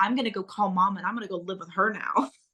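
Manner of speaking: ordinary delivery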